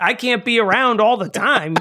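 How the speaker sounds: put-on Southern accent. Joking that the accent is a worker on break: Anna Paquin's accent as a voice. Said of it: "that's the voice of her accent".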